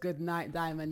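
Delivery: normal talking voice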